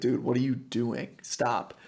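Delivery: ordinary talk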